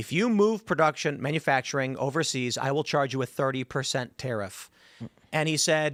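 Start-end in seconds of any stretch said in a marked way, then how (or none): none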